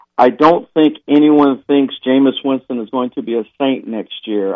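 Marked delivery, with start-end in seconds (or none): none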